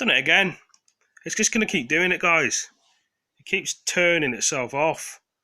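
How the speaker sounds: angry exasperated griping. A speaker apologizes to viewers as the tv keeps switching off, angry. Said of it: "Sorry for getting angry".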